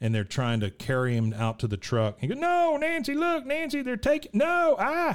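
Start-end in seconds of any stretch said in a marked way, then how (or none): 2.4-5.1 very high, shrill, drawn-out screaming. Retelling how Dale fights the men carrying him out, imitating Dale screaming. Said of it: "He's screaming like crazy".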